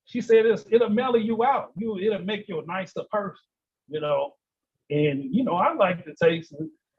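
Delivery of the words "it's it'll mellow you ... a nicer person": plain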